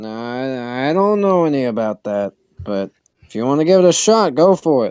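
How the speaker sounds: casual, unbothered tone. Game master voicing the Stern answering a player's question, shrugging it off. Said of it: "And um the [name] just kind of like shrugs".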